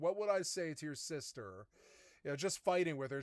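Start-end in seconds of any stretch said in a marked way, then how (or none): none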